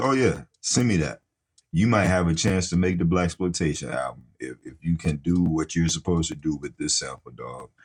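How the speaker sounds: normal talking voice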